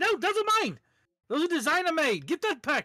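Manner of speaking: terrified, near tears, very high, shrill, panicked whimpering. Playing a character whose shoe is being taken off, terrified pleading.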